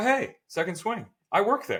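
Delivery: friendly, high, bright-sounding male voice.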